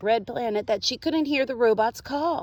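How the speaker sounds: ordinary delivery, nothing marked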